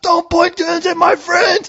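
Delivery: very high-pitched, shrill, demanding scream. Retelling screaming at the police: imitating own past screaming at police. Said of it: "I was screaming at the cops".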